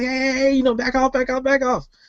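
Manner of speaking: high-pitched, cowardly yell at full volume. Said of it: "he's yelling out the top of his lungs".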